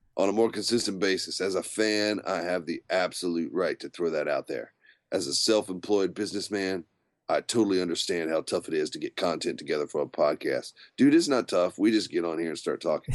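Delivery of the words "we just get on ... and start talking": ordinary talk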